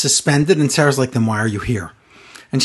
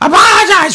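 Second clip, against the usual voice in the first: mock very high, shrill, top-of-lungs scream; 13 semitones higher, 5 dB louder than usual. Retelling a wrestler screaming into an interviewer's ear: imitating a scream. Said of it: "She screams at the top of her lungs into Sarah's ear".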